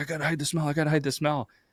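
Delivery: put-on frantic, high, panicked repetition. Retelling a friend panicking in the car before a football game, imitating his panic. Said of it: "he was like panicking".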